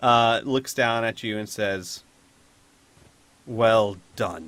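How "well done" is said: low, grudging and slightly annoyed voice. Narrating as Shao Ta looks down at the players and speaks: a bit annoyed. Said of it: "sounding a bit annoyed".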